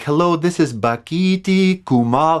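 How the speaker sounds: slow, carefully enunciated speech. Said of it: "really trying to, like, say it clearly".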